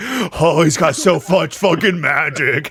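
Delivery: high, loud, drawn-out ecstatic creature cry in rapture. Voicing a monster overjoyed at sensing a spellcaster: creature in ecstasy.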